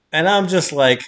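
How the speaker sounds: ordinary talk, nothing marked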